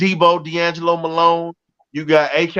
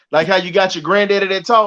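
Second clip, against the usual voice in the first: ordinary delivery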